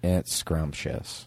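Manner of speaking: soulless deadpan, flat, lifeless, hushed and breathy. Leading a group in repeating a woman's word, imitating her soulless deadpan. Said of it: "say it like she said it with no soul".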